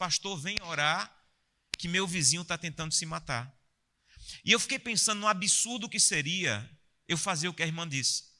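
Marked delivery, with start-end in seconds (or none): none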